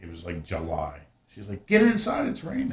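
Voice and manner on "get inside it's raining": mock very high-pitched yelling, high screaming. Retelling a mom calling a child inside from the rain: imitating mom screaming. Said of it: "my mom coming out screaming at me".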